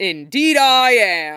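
big, loud booming voice. Narrator reading a large man's reply to a small child: booming. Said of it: "he booms".

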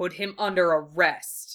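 low growled delivery. Ordering an arrest amid a ship's wreckage, growled. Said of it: "he growled".

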